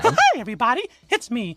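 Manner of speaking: squeaky voice, pitched high and bouncy. While texturing a 3D model, noticing how their voice sounds, Mickey Mouse voice. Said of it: "Mickey Mouse".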